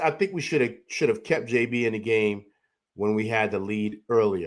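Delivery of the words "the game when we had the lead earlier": normal talking voice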